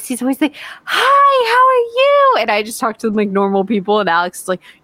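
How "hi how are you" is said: fake syrupy sweetness, very high, slow, drawn out. Mocking how Alex talks to service people, imitating Alex's syrupy voice. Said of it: "Alex always uses that weird, fake, syrupy voice".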